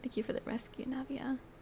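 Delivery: quiet whispered words.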